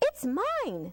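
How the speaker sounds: tiny, high, squeaky insect voice. Narrating a garden story, voicing the squash bug: squeaky voice. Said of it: "squeaked the squash bug".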